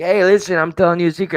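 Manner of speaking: high-pitched, loud voice.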